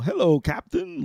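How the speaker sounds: high, servile, slavish servant voice. Showing how a game character's voice could go wrong: slavish voice. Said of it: "this kind of slavish voice".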